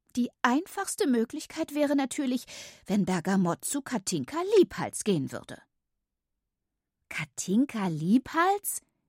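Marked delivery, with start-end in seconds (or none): 7.0-8.8 repeating words in amazed astonishment. Two listeners repeat a name just mentioned, in unison, astonished repetition. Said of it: "wiederholten Bille und ich wie aus einem Mund".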